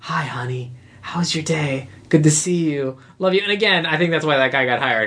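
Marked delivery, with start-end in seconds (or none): 0.0-3.4 put-on quiet voice, much slower. Recounting a scene where the dad comes up, imitating the dad's quiet voice. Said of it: "it's kind of funny to hear him do that quiet voice".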